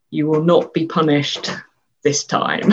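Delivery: ordinary delivery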